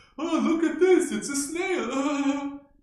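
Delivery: very high, booming, loud nature-film narrator voice. Mocking how a guy who makes ocean movies talks: imitating an ocean filmmaker's talk. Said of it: "This is how he talks".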